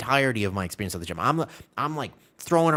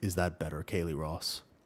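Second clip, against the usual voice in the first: very deep, low, soft put-on voice; 7 semitones lower, 9 dB quieter than usual. Right after announcing they will drop their voice, asking a listener in a dropped, lowered voice. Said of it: "I just got to drop my voice like this".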